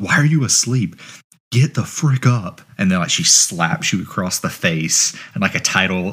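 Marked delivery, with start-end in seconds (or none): 0.0-2.6 high-pitched, half-yelled, mild scolding tone. Retelling a game's opening where your mom wakes you: imitating someone yelling. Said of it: "yelling at you".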